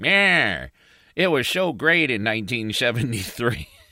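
put-on laid-back, cool old-timer voice. Recalling ranting about horror movies, doing a cool old man voice. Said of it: "I sounded like a cool old man".

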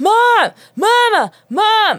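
put-on very high, loud little-kid toddler yell. Retelling how the daughter yells from the crib: imitating a toddler yelling. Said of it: "She's yelling".

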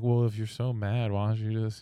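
fake dull, monotone voice. Describing the emo girl in the group, speaker mimics her: put-on monotone May impression. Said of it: "Monotone speaking".

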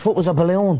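high-pitched, very bad Irish accent. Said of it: "That is the worst Irish impersonation".

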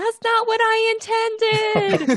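shrill, very high put-on character yell. Voicing a character who yells during a fight: character yelling. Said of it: "Winley yells".

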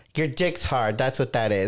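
ordinary delivery

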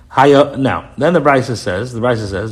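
ordinary talk, nothing marked

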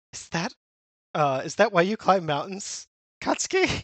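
terrified, frightened, faltering, stumbling over words. Retelling a manga scene as the unsettled father: imitating a terrified father. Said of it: "he's terrified".

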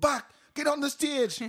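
put-on high, screamed Jamaican accent MC-style shout. Recalling dancehall nights, the speaker mimics the MC calling them onstage: imitating Flex's Jamaican accent. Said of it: "I can't do a Jamaican accent".

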